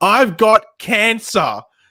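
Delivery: shrill yell pitched very high. Retelling how a friend in the cinema yelled out: imitating someone yelling. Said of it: "just yells out in the cinema".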